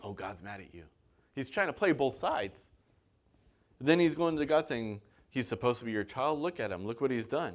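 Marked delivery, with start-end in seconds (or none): 0.0-0.8 put-on whisper, much quieter and lower. Speaker acting out a deceiver's words to a listener, acting out a whisper. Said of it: "he's whispering".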